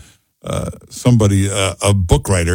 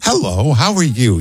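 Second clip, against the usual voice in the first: warm, sweet, friendly Utah-style voice. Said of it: "you sound so friendly... so warm and sweet".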